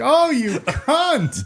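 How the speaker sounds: mock, very loud, very high laughing, jeering tone. Retelling a tv scene at a poker game: imitating a laughing insult. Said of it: "he says it, like, laughingly".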